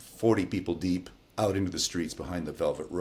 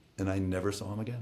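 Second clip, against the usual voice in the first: ordinary talk, nothing marked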